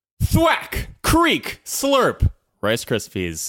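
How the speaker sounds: very high-pitched commercial advertiser announcer voice. Reading out a submitted slogan to the group: advertiser or announcer voice. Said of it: "Put on your best like advertiser or announcer voice".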